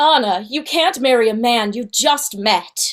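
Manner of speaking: storybook cartoon princess voice. In a guess-the-voice game, a player does an Elsa voice. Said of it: "do a voice and we have to guess".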